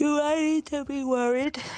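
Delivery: speaking through a yawn. Speaker asks a question in conversation while yawning. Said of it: "Sorry, I was yawning".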